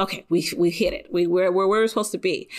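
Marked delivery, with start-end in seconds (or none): none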